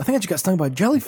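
cartoon-like comic-book delivery. Retelling a friend getting stung by a jellyfish: imitating Nico like a comic book. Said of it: "make me sound like a comic book".

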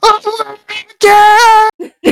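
very high shriek at full volume, "my" drawn out. Retelling the moment the ride elevator dropped: retelling a scream at top of lungs. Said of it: "at the top of lu-, my lungs, I screamed".

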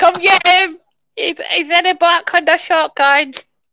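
very high-pitched, silly, funny character voice. Acting out what a woman in the movie might shout as police pass, funny voice. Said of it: "you doing a funny voice of".

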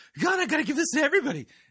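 high, fast, mocking preacher impression.

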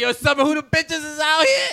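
very high, loud, rising yelled call-out. Retelling calling out with friends in the summertime: retelling a yell. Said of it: "you realize you're yelling, right?".

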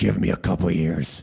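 mock elderly man voice. Replying to a point about league player pay: Vince McMahon impression. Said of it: "that's my Vince McMahon impression".

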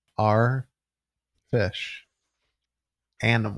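emphasized for dramatic effect. Answering a quick-round quiz question; dramatic emphasis. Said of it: "emphasizing his answer for a dramatic effect".

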